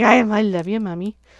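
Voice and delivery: put-on dog voice. Voicing the dog Buddy getting a belly rub: voicing Buddy the dog. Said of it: "he's like".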